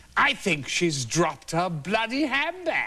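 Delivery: slow, high, affected camp drawl of veteran actor.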